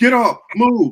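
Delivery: put-on, very high, shrill, loud barked police yell. Retelling how officers on horses ordered people down: imitating police yelling.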